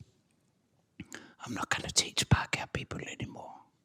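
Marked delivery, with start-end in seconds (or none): 1.5-3.5 said very quietly in a fast, unvoiced whisper. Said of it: "really quietly he said".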